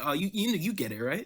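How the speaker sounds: teasing, jokey drawl. Retelling how he said it, as if joking: imitating a joking tone. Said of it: "he said it like he was joking".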